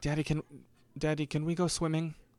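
put-on British accent. Retelling what Teddy's kids asked him on a stroll, British accent. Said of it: "I gave them British accents".

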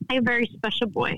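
emotion catching in the throat, voice catching. Remembering a boy who passed away, choked up. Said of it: "I'm getting a little choked up".

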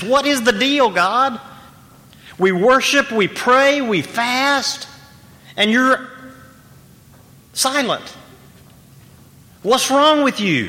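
sulky, petulant whine. Explaining Isaiah 58, voicing God's people crying out, in a mock-whiny, pouty voice. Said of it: "in a kind of whiny, pouty voice that says".

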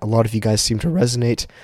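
voice cracking. Lying down, telling podcast listeners about his energy updates: voice cracking. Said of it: "There's another voice crack".

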